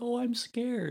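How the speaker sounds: mock frightened little squeak, very high. Retelling Nancy's line from the show: imitating a scared Nancy. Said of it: "'cause Nancy's all scared".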